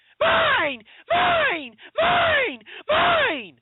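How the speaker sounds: very high, loud, bratty infantile shriek.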